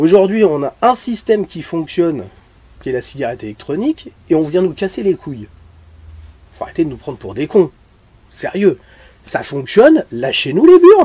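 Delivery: very loud, exasperated, swooping angry rant. A speaker vents to his audience, saying he is angry: angry rant. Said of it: "je suis énervé".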